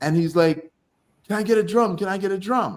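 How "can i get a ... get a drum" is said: put-on keen, eager, excited, all-worked-up tone. Retelling a story, imitating a man asking for a drum: imitating someone excited. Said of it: "he's all excited".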